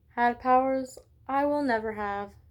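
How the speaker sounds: plain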